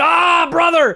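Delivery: high, loud wrestler-style screaming and yelling. Act out Hulk Hogan going down after a bat hit to the knee, imitating Hulk Hogan screaming. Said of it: "He's screaming".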